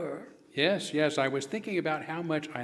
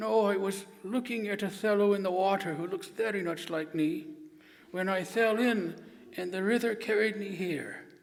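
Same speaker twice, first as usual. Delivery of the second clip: storybook teddy-bear cartoon puppet voice; 4 semitones higher than usual. Voicing the dummy Winnie the Pooh, answering questions: Winnie the Pooh voice. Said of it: "my friend Winnie the Pooh".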